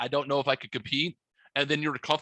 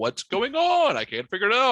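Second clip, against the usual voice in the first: acted, flustered, frantic, high, swooping panicky babble; 7 semitones higher, 5 dB louder than usual. Retelling a sudden technical problem while listening: imitating own past panic. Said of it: "I started to panic".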